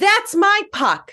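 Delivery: mock very high-pitched yell. Retelling a hockey game, when a puck bounced away: retelling own yell. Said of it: "I turn around and I yell".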